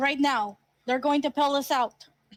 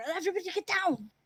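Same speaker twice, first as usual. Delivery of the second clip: hushed, pitched-up stage whisper; 5 semitones higher, 7 dB quieter than usual. Player in a tabletop game repeats their character's call to the group, stage whisper. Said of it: "I I'm like I kind of like whisper".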